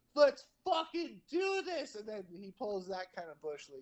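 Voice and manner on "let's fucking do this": put-on very high, stretched-out, drawn-out shout. Retelling watching a hockey fight from the chair: imitating yelling at the tv. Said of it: "I was yelling at the T V".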